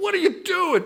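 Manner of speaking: shrill, piercing, very high-pitched, loud yell. Speaker recalls yelling as his wife drove the new car into a pole, retelling a yell. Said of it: "I'm yelling like".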